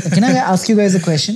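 fast, high laughing voice.

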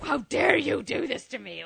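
creaky, pissed-off, deeply insulted, affronted indignation. Retelling a dream about a captured Loki: imitating a pissed-off Loki. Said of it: "all pissed off with his high cheekbones".

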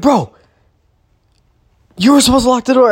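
put-on shrill, rushed, rattled-off yelling, very high. Recounting opening the door to a yelling roommate: retelling his own yelling. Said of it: "I just start yelling".

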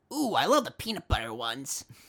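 put-on swooping, sing-song kid character voice. Acting out a kid's line from a planned script: kid character voice. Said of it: "In that voice right there".

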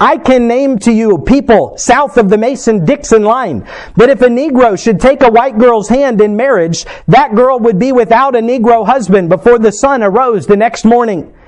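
ordinary talk

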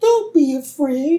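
high, slow, gentle alien voice.

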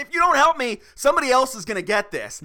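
high, loud, urgent tone.

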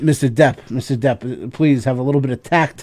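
ordinary delivery

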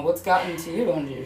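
normal talking voice

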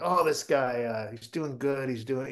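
muttering under the breath. Retelling a heckler commenting at a comedy show: imitating someone muttering under his breath. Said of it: "talking under his breath, like he's commentating".

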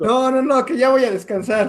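high, drawn-out speech through laughter. Repeating a friend's line while apologizing, laughing while talking. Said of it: "me estoy riendo, perdón".

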